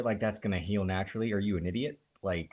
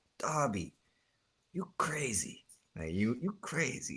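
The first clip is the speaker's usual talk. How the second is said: put-on Spanish-accented voice, higher pitch; 4 semitones higher, 4 dB quieter than usual. Retelling a famous wrestling promo: Andrade impression. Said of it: "the most famous promo he had was the Darby Allin. He's like".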